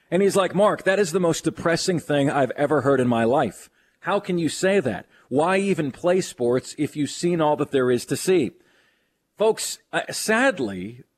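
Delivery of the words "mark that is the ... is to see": ordinary talk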